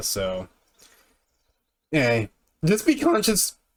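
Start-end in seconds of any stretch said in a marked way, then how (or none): 2.6-3.5 voice breaking, cracking very high. While giving advice, the speaker's voice cracks; voice cracking. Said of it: "that was a bad voice crack".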